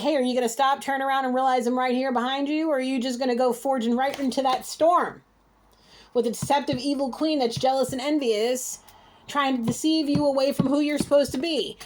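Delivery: ordinary talk, nothing marked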